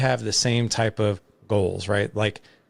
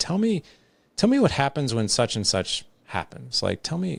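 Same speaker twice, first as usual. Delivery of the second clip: mock open, curious, inquisitive tone with swooping pitch; 4 semitones higher than usual. Retelling how questions are put to kids: retelling own curious tone. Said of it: "in that voice tone of curiosity".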